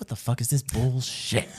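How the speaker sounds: imitated muttering. Describing a woman who acts like a coworker when the boss walks by, retelling a mutter. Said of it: "she like mutters to you".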